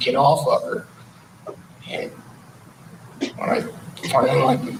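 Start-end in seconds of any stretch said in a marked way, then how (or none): none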